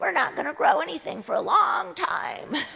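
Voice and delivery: rough, high, creaky little dwarf voice. Voicing little dwarf fruit trees during a talk, in a dwarf voice. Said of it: "so they talk like this".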